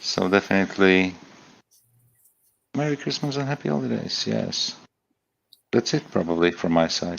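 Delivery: soft, hushed speech. Signing off a group call while their mother has gone to bed, in a quiet, lowered voice. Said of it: "That's why I lowered my voice".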